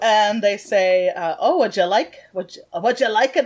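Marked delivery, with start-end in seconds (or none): 1.4-3.5 put-on Scottish accent. Voicing a bartender who speaks to a player: Scottish accent. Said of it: "I don't need to be so frickin' Scottish".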